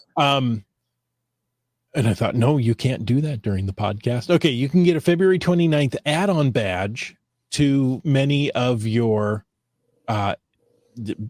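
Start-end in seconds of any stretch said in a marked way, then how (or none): none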